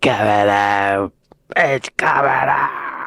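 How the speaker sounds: deliberately clumsy, bad put-on British accent. A visitor to england tries out a bad british accent for fun. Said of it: "my bad British accent".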